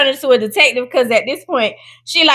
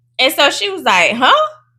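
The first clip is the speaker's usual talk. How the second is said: normal talking voice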